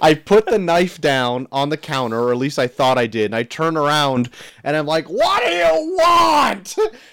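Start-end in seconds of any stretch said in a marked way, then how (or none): 5.1-6.8 mock, very high, very slow, drawn-out screaming. Father recounts turning around to his kids, retelling screaming at kids. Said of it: "Just screaming at them".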